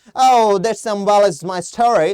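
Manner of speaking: loud put-on English accent. Explaining accents, speaker shows how an Englishman would say it, in an English accent. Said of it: "इस तरीके से बोलेगा, वो उसका एक्सेंट है".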